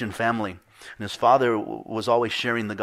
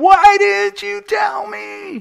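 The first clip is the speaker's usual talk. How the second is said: very high, slow, raw, drawn-out screaming; 9 dB louder than usual. Retelling a dream, voicing a man screaming at another, imitating someone screaming. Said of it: "the guy's screaming".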